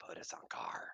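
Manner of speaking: soft, close, hushed whisper. Telling a story, acting out a man whispering in a woman's ear, whispered. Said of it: "and he whispers in her ear".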